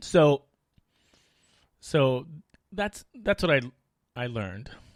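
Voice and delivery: voice catching and breaking, choked-up and halting. Reflecting aloud on a hard lesson learned, a little choked up. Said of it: "I'm sorry for I got a little choked up there".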